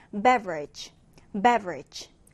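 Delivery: "beverage" with first syllable BEV stressed, low falling.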